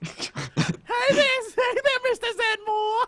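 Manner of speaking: very high, drawn-out character voice. Joking about pretending to be a girl online: Janine from Ghostbusters voice. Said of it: "I'm imagining the character from Ghostbusters".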